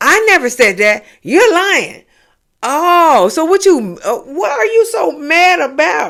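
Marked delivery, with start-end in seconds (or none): 0.0-2.0 mock angry, heated, flat delivery. Retelling an argument, quoting Stacy's reply: imitating Stacy angrily. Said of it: "So Stacy get mad and say that".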